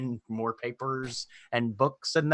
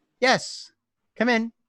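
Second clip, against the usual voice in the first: very high-pitched feminine voice; 10 semitones higher than usual. Narrating a scene where a woman answers a knock on the door, in a feminine voice. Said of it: "you hear a feminine voice".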